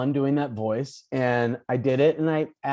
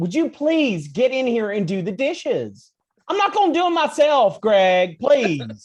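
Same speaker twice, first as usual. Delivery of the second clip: very high-pitched, swooping, put-on nagging voice; 9 semitones higher, 5 dB louder than usual. Recalling the voice roommates used to nag each other about chores, put-on nagging voice. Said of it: "we just started doing this voice to each other that was like".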